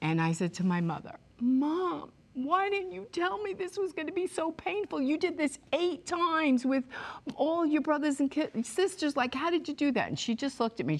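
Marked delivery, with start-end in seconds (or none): 1.4-10.1 mock very high, tearful weeping voice. Recounting what they asked their mother after he drove away: retelling weeping. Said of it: "I am weeping".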